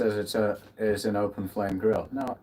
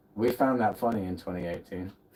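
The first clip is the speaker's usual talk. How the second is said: ordinary delivery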